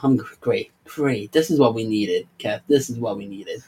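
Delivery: really heavy, dry sarcasm. Complaining about players yelling slurs in the game: sarcastic. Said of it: "I'm being really sarcas-, sarcastic right now".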